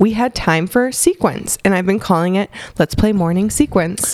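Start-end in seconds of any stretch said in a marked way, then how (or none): none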